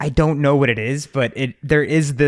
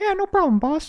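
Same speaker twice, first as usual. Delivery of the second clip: very high-pitched cartoon mouse voice. Acting out a bit between Goofy and Mickey, giving Mickey's reply: Mickey Mouse voice. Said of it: "He'd be like".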